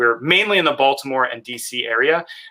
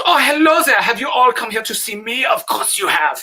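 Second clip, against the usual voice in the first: very high, really bad Eastern European accent; 11 semitones higher than usual. Describing a character they play, the speaker demos a bad Eastern European male model. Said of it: "he talks like this".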